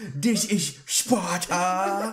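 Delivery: put-on Scottish movie-star accent. Playing a stranger who knocked someone over, doing a Gerard Butler impression. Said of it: "I'm just doing my best Scottish accent".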